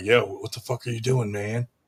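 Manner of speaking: put-on whisper. Retelling what was said during a boxing match: imitating a whisper.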